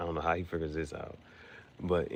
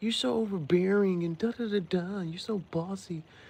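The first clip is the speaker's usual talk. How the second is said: tipsy mockery, very high, taunting voice; 14 semitones higher, 4 dB louder than usual. Retelling how a woman on the phone started mocking him: retelling a mocking taunt. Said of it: "So she started mocking him".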